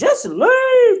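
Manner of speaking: high-pitched, exasperated hollering. Speaker mimics a woman in a video who kept hollering: imitating someone hollering. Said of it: "Just hollering it".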